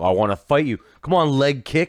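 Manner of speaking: acted sloppy drunken taunting, high-pitched. Describing how fights start, imitating a drunk buddy's taunt. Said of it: "he gets up and is like".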